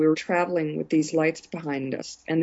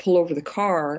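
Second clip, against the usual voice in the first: ordinary delivery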